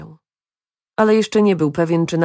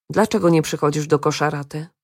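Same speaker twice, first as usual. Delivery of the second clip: ordinary delivery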